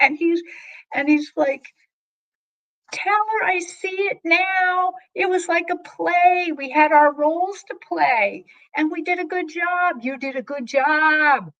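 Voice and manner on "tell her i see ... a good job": mock excited yell, word "job" drawn out. Retelling what a spirit yelled to the medium: imitating someone yelling. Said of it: "And he keeps yelling".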